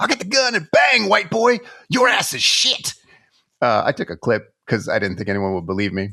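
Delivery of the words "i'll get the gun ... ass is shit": very high-pitched, shrill screaming. Retelling what a character screams in a movie scene: imitating someone screaming. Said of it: "what does he scream?".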